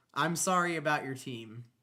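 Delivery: snide, sassy, fake-sorry sarcastic sympathy. Retelling what an old lady said on the concourse: imitating a sassy, sarcastic tone. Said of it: "just so sassy and sarcastic".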